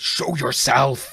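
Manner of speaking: very loud, full-voice shout at top of lungs. Playing a character surveying a devastated room: shouting at top of voice. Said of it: "just top of voice".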